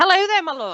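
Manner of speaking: loud, booming voice. Greeting the podcast host on the line: very loud greeting. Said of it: "that was very loud, my darling".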